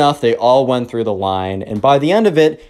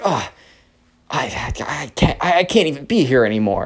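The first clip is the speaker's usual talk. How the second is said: mock angry female huffing, quieter; 4 dB quieter than usual. Retelling a woman walking away from the cake stand: imitating an angry woman. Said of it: "all mad and angry".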